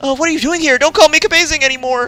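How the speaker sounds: very high, mildly irritating voice. Voicing a game character's lines aloud: slightly annoying voice. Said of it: "a slightly annoying voice".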